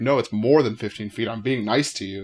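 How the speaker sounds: normal talking voice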